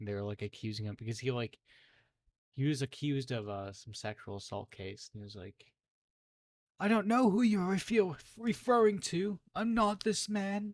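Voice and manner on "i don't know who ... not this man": put-on British accent, very high pitched and slow. Retelling how an accused man denied it, fake British accent. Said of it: "he like got this fake accent".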